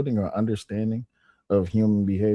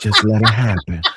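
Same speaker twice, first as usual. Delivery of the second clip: put-on whispering; 8 dB louder than usual. Retelling what another speaker whispered: imitating someone whispering. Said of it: "'cause you whispered".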